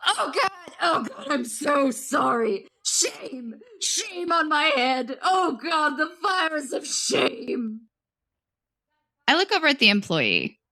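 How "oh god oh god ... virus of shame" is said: high, slow, sobbing, screaming wail. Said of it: "starts screaming".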